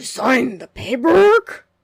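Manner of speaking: slow, loud, menacing angry growl of disbelief. Narrator reads a glowering man confronting Jeff and the narrator: ominous angry growl. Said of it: "An ominous, angry voice growled in disbelief".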